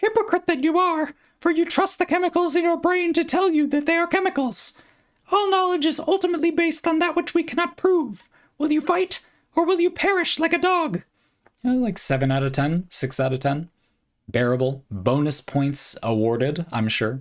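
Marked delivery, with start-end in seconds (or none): 0.0-11.0 very high, tiny, piping cartoon-mouse voice. Voicing a quote in different voices for bonus points, doing a Mickey voice. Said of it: "and then Mickey we could probably do".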